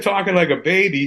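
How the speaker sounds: ordinary delivery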